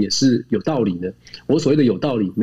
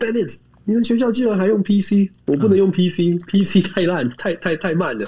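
high, over-the-top joking yell of mock outrage; 8 semitones higher than usual. Retelling a visiting scholar's joke at a school talk, imitating his shout. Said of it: "然后他就大叫".

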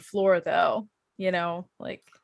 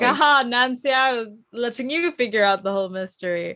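evil, sneering, cartoony villain voice; 3 semitones higher than usual. Imitating Lewis gloating to Nancy: imitating a cartoony villain. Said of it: "he's such a cartoony villain".

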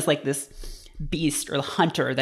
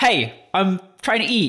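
curt, guarded, dismissive tone, higher pitch; 4 semitones higher than usual. Retelling Macaulay brushing off a woman trying to talk to him at dinner: imitating Macaulay, curt and guarded. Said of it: "almost a parody of a person being on their guard".

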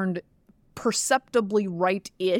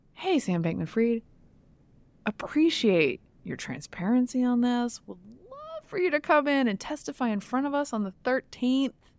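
breezy, chummy, very chill tone, pitched up; 5 semitones higher than usual. Suggesting the tone for inviting someone to come and testify, very chill tone. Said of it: "let me give you the tone. ... Very chill, very hey, bestie".

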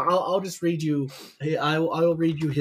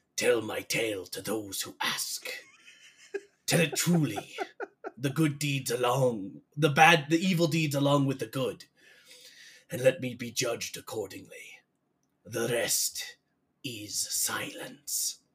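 soft, Shakespearean dying villain voice; 3 semitones lower, 5 dB quieter than usual. Recounting a villain's last words as he lies dying, doing the dying villain's voice. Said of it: "a villain who talks like this the entire time".

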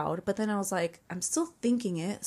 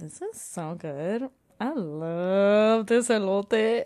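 play-acted very slow, goofy, sarcastic gushing, "love" stretched. Retelling what she said in the car about the corn: imitating her own sarcastic praise. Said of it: "being goofy about it".

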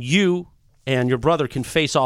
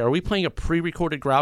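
ordinary talk

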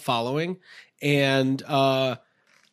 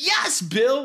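very high, gleeful, carefree, happy goofball voice; 9 semitones higher than usual. Imitating the character Ted's line from the movie: Ted voice. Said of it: "where he's like".

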